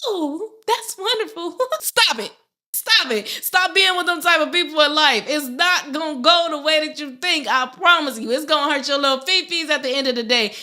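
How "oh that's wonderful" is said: fake, high, squeaked voice. Mocking people who fake being happy for you, use a Mickey Mouse high voice. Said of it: "They hit you with the Mickey Mouse high voice".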